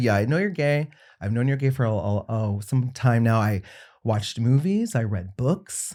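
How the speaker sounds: plain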